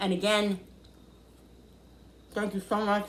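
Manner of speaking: speaking with a mouthful of food. Video creator thanking viewers for joining in the kitchen, talking with mouth full. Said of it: "I got a mouthful of food".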